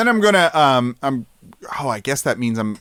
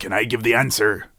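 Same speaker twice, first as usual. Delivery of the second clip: put-on pirate voice, lower pitched; 5 semitones lower, 4 dB quieter than usual. Voicing John Australia, who asks to give an answer: John Australia pirate voice. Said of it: "John Australia, we're not asking you".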